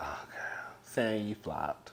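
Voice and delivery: hushed, soft, disappointed whisper under the breath. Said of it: "So I was like".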